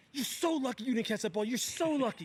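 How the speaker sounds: high-pitched, heated screaming rant. Recounting a football play, retelling screaming at a player. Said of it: "I'm screaming in Jerry's face".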